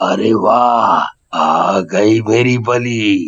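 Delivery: very slow, deep, drawn-out ghost voice. Narrating a village tale, the ghost greets the old woman, cobbler ghost voice. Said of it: "पहले तुम ये तो बताओ कि पूरा गांव तुम्हें मोची वाला भूत मोची वाला भूत करके बुलाता है, / भूत बनने से पहले मैं एक मोची था। मैं इसी गांव में काम करता था। मुझे जूते बनाना बहुत अच्छा लगता था। मैं गांव वालों".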